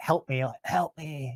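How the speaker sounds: faint, hushed, barely audible pleading. Retelling sleep paralysis, imitating a barely audible plea: imitating a barely audible plea. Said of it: "barely eking out ... barely audible".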